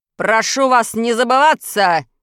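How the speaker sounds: offended shout. Reading a tale, the warbler's husband answers the threatening pike: offended shout. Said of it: "Оскорбленно крикнул муж Камышовки".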